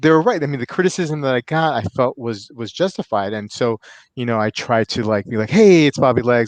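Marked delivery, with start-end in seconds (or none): 5.5-6.5 put-on lively, raised voice, not overdone. Showing the intro line he tried after criticism, upbeat, not overdone. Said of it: "I needed to liven it up".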